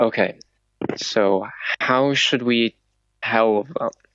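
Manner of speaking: voiced, audible stage whisper. Voicing a character who whispers to his companions near the guards, whispering. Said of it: "and then he whispers".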